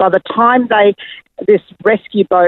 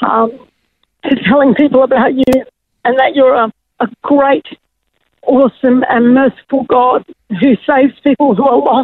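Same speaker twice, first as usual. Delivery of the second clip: deeply moved, heartfelt, emotional, pitched-up voice; 6 semitones higher than usual. Recounting a promise made to god out in the ocean: emotional. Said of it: "sorry, it makes me emotional".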